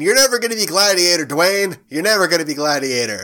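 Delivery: self-satisfied jabbing tone. Imagining taunting someone who wants to play Gladiator, retelling it mock-smug. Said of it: "And me smugly saying".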